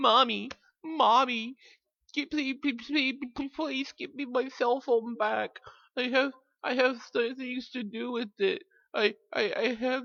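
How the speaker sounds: put-on very high, stammering, whiny childish baby voice. Mocking someone's begging plea: imitating a whiny baby. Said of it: "You sound like a fucking baby".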